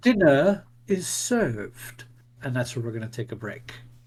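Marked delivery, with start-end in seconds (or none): 0.0-2.0 hollow, swooping voice of a ghostly butler. Voicing a ghostly butler greeting the players: hollow ghostly butler voice. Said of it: "He speaks in a hollow voice".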